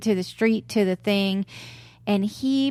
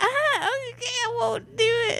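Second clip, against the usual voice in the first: put-on pitched-up voice, higher; 14 semitones higher than usual. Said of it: "and my voice kinda pitches up".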